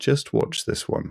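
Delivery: hushed, whispered mutter under the breath. Narrating the scene, Thoric speaks in Dwarvish; Thoric muttering under breath. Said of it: "Thoric says under his breath".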